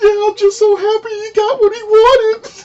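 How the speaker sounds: put-on, very high, drawn-out, blubbering sob-talk. Retelling how a cousin reacted to a movie scene: imitating someone bawling. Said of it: "she just starts bawling".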